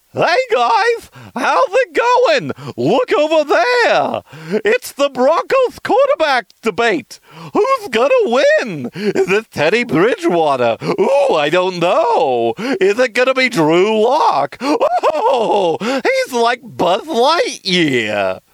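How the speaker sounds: very high, swooping, crazy happy clown voice. Speaker showing off one of their practiced voices: crazy happy clown voice. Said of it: "Crazy Happy Clown".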